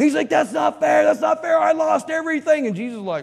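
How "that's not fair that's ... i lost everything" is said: high, loud, rough-edged, put-on full tantrum outburst. Telling a joke, voicing the devil after losing everything: acting out a fit. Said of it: "And the devil had a fit".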